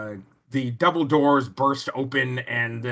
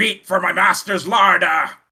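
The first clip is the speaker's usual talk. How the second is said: raised, pitched-up, monstrous ghoul voice; 5 semitones higher, 5 dB louder than usual. Narrating a game, the ghoul rushes into the room: ghoul proclaiming. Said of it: "as it proclaims".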